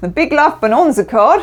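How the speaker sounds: terrible put-on Australian accent, high. Tarot reading, naming the big love bonanza card: terrible Australian accent. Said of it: "that's my terrible Australian accent".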